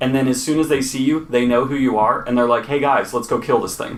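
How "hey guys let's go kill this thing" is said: usual speaking voice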